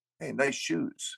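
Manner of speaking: hushed, very quiet whispered delivery. Retelling how Phil greeted him near the stage: imitating Phil whispering. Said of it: "He'd whisper to me".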